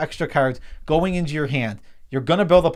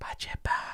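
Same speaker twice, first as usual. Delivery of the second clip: hushed whisper, quieter. Joking that a secret card name must be whispered: whispering. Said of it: "meaning you have to whisper".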